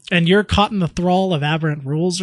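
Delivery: plain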